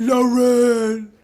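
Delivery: male shout. Retelling how a guy in the hallway shouted into the room: imitating a man shouting. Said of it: "the whole time he's shouting".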